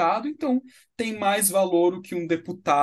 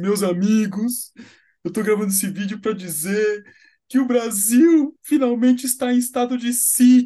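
mock crying while talking, louder; 4 semitones higher, 6 dB louder than usual. Retelling a viral video of a truck driver, imitating the man crying. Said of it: "O cara chorando falou assim".

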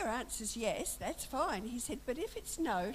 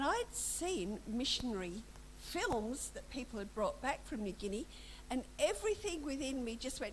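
usual speaking voice

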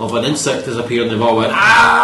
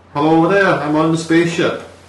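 imitated Danish accent; 5 semitones higher than usual. Talking about accents, demonstrating what a Danish accent sounds like; Danish accent. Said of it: "So a Danish accent would be".

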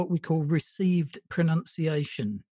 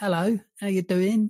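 put-on London Cockney accent; 3 semitones higher than usual. Recalling how they sounded on earlier podcasts, Cockney accent. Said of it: "my Cockney accent".

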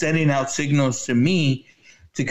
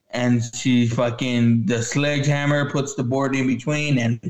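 ordinary talk, nothing marked

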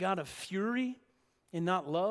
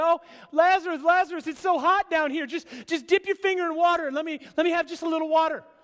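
shrill, loud, high call carrying far upward; 9 semitones higher, 10 dB louder than usual. Retelling the parable, acting the rich man in hell calling up to Lazarus: calling out from below. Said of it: "is calling up to Lazarus".

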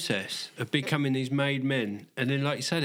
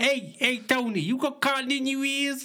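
very high, put-on mafia soldier voice; 11 semitones higher than usual. Showing a different take on the mafia bit: put-on mafia soldier voice. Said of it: "I go more soldier".

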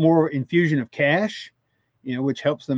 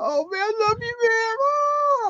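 put-on tearful crying, higher. Retelling a car owner's words on the radio after a race: imitating someone crying. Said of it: "the car owner was literally, like, crying".

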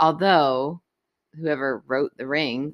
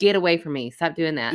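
ordinary talk

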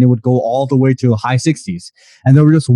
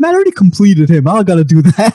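snotty, dismissive, rude tone swooping up high; 6 semitones higher than usual. Retelling a reply to a friend who was sent over: retelling a rude reply. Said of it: "I said it in a very rude way".

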